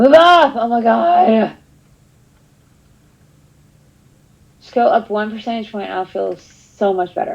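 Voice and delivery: stressed, worried, anxious, frantic voice. Watching a percentage that won't go up: stressed and worried. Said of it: "I need to shut up".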